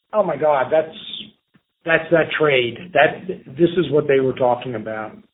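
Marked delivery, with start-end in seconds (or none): none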